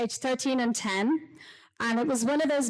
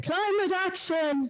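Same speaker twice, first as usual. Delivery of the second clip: put-on high, full-throated roaring shout of a kid; 7 semitones higher than usual. Retelling a son's reply in the car: imitating a roar. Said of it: "And he just roared".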